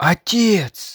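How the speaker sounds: gasping. Anna suddenly recognizes the face of a statue: gasped. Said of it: "Вдруг Анна ахнула".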